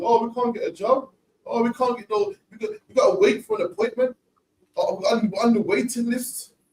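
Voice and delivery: put-on whingeing like a crybaby, high and whiny.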